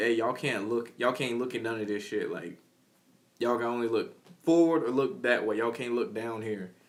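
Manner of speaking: ordinary delivery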